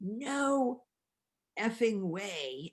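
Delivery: loud shout with a long drawn-out "no". Retelling how the speaker's husband reacted to the finished manuscript, imitating a shout. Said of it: "He shouts".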